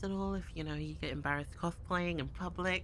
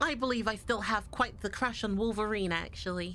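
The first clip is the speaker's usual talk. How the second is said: British accent character voice; 2 semitones higher than usual. Asked for a Squirrel Girl impression, giving another line in a British-accented Squirrel Girl impression. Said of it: "Time to get rid of the Britishness".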